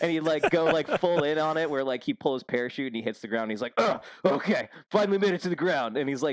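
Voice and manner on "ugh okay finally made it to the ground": earnest, dead-serious military voice, pitched up. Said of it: "just super, super serious about it".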